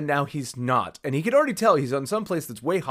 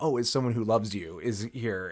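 ordinary talk

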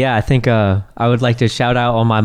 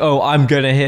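ordinary delivery

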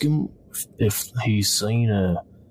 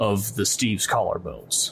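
usual speaking voice

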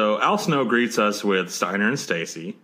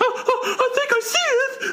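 very high, stretched-out, drawn-out shriek. Retelling a wrestling broadcast moment: imitating Jerry Lawler screaming. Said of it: "Jerry Lawler screaming".

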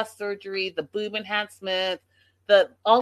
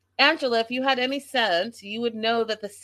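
ordinary talk, nothing marked

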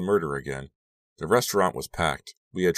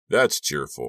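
wry, dry, sarcastic, unimpressed tone; 3 semitones lower than usual. Someone replies to friends who were talking about the killer; dry. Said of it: "Gideon said dryly".

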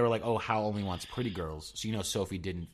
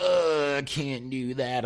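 put-on high, very slow, drawn-out old woman voice; 5 semitones higher, 6 dB louder than usual. Retelling a film scene, imitating old Sophie. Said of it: "mannerisms as, like, an older woman".

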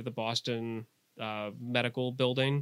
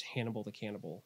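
mock mutter, much quieter and lower; 3 semitones lower, 10 dB quieter than usual. Describing how she says Dr. Lecter's nickname: retelling an under-breath mutter. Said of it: "like under her breath".

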